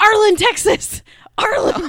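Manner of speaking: very high, very loud shrieking scream at full volume. Retelling a moment from a clip, screaming as the Ghost of Christmas Past. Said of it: "the Ghost of Christmas Past screaming".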